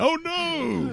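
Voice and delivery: very high-pitched cartoonish cry. Joking that the Kool-Aid Man is leaving the room: Kool-Aid Man voice. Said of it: "That's a Kool-Aid Man running out of the".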